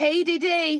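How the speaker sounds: homemade, put-on Australian accent. Repeating a greeting when asked: put-on australian accent. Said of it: "That's my Australian".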